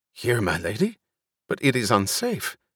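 ordinary delivery

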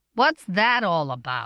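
ordinary delivery

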